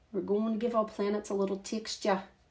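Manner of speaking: gentle Australian accent. Painting texture on planets, saying the fun word in an Australian accent. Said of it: "I'll say it in the in an Australian accent".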